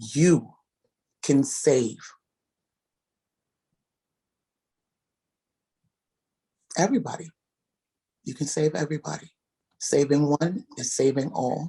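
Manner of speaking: speaking through tears, crying. Speaker thanking those who have served, crying while talking. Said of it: "I'm crying now".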